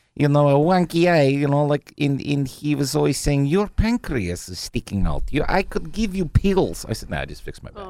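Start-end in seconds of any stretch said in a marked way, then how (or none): 3.5-6.8 mock Russian man voice with put-on Russian accent. Telling a story about a man treating their back, imitating a russian accent. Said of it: "he talks like this, and he's from Russia".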